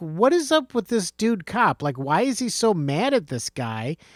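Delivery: ordinary delivery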